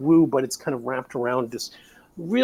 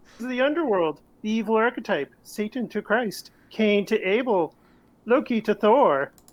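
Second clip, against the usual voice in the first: put-on frog-like puppet voice, higher; 8 semitones higher than usual. Voice acting a passage, doing a Jordan Peterson impression. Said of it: "that's a pretty decent, uh, Peterson".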